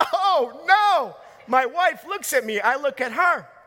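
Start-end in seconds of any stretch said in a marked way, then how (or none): 0.0-1.2 sudden, high screaming cry of a woman. Retelling how the house owner reacted downstairs: imitating a woman screaming. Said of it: "She literally screams".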